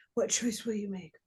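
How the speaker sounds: plain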